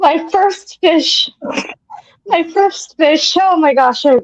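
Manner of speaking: laughing, words broken up by laughter. Starting a funny story about a first fish, laughing while talking. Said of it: "I can't say it without laughing".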